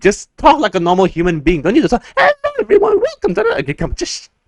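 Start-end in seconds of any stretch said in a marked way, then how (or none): 2.2-3.6 very high, squeaky cartoon-mouse voice. Mocking a YouTuber's intro videos, Tyler Oakley intro impression. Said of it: "you sound like Mickey Mouse".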